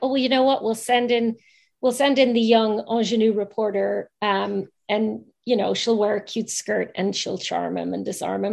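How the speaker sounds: plain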